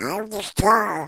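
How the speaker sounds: high-pitched, tiny little duck voice. Speaker talks about his career with Yakky Doodle, then speaks as Webster: Webster duck voice. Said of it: "it is Webster's voice".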